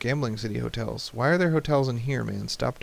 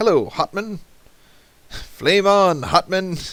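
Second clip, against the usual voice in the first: high, booming, drawn-out, slow belted voice; 8 semitones higher, 8 dB louder than usual. Retelling a cartoon scene of a disguised character greeting people: imitating Last Airbender character. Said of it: "So he goes around going".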